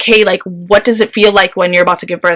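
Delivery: ordinary delivery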